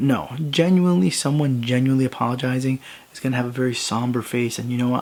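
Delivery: normal talking voice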